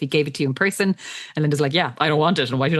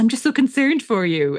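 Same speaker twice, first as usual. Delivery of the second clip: high-pitched, condescending, patronizing voice of fake concern; 7 semitones higher than usual. Recapping a book scene, quoting Liz: mock patronizing Liz voice. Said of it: "really annoying and patronizing and like".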